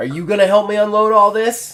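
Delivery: high, loud, pointed delivery. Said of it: "kinda looks at him and goes".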